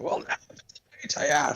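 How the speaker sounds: put-on angry Scottish accent. Retelling the crab people in the Aquaman movie: imitating an angry Scottish accent. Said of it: "they got this angry Scottish accent".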